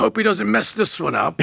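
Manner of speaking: high, creaky voice of the music gods on high. Speaking as the gods of music watching songwriters: gods of music voice. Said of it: "I always use this sort of voice".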